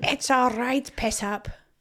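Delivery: Scottish brogue with strongly rolled R's. Chatting about accents, speaker tries one out; Scottish accent impression. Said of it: "that was really good".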